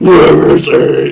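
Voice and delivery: harsh, rough barking voice.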